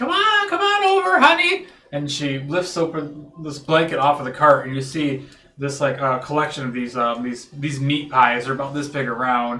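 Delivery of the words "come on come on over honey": very high-pitched, loud pie-seller street vendor voice. Voicing a woman with a pie cart greeting a player: pie seller character voice. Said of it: "she says".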